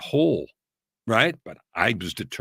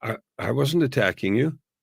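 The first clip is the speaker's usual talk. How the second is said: mock-surprised, taken-aback tone; 2 semitones higher than usual. Retelling how she answered his accusation, imitating her surprised reply. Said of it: "in a surprised way, she looked at me and said".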